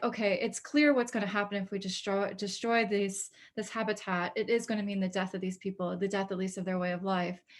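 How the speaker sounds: normal talking voice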